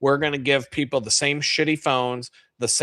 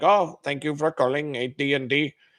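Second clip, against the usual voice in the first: put-on Indian accent. Acting out a tech support worker answering a call: imitating Ranjit from tech support. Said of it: "Ranjit's gonna be right there being like".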